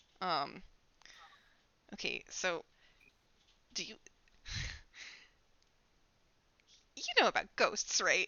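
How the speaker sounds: secretive, conspiratorial whispered aside. In a role-play scene, a character draws another closer to confide, conspiratorial hush. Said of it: "Conspiratorial conspiratorial like little little get".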